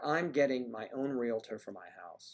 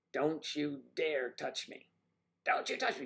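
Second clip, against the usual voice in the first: put-on female scream, pitched higher; 14 semitones higher, 3 dB quieter than usual. Describing a woman yelling at nurses, imitating Mary screaming. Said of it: "She's screaming".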